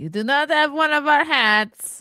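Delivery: loud, high, put-on Eastern European accent. Talking with strangers about their big families, slipping into the Borat voice. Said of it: "I keep going into the Borat voice".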